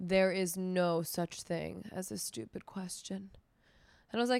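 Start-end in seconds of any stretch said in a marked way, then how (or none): 0.0-3.3 acted slow, patronising, talking-down tone. Retelling how a manager cut off the speaker's question, mock-condescending tone. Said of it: "It was very like condescending".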